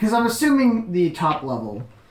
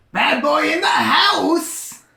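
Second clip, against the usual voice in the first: very high, swaggering, cocky character voice; 9 semitones higher, 3 dB louder than usual. A tabletop game player gets into a character's voice, speaking in character voice. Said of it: "Let me get into the voice".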